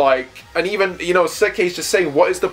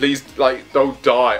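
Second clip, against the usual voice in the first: mock pleading, put-on begging tone. Recapping a scene, acting out a character begging. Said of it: "she's begging him".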